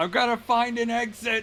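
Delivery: very high-pitched yelling. Running past the enemies to find an exit, the character shouting. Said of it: "the while I'm shouting".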